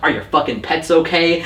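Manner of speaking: plain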